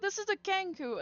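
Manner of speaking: high, loud, indignant voice.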